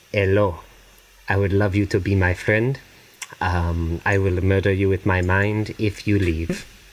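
put-on Spanish accent, "I" drawn out. Asked to play as the Spaniard in a bit, Spanish accent. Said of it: "You want me to do an accent".

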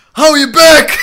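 irritated, very loud, very high, shrill shout. Retelling a quiet man yelling across a McDonald's, retelling a loud shout. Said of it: "hij riep keihard door de McDonald's".

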